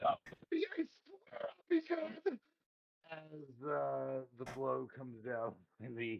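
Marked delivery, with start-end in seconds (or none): 0.0-2.4 shrill, very high, pleading scream. A character screams as an attack comes in, screaming. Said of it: "all you hear out is these screaming".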